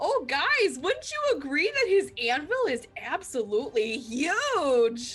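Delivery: loud yelling. Voicing an apprentice who calls out to the guards, loud yelling toward the guards. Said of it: "she acts like she's yelling towards them".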